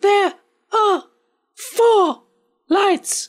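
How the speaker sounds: put-on high little girl voice. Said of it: "someone doing a little girl voice".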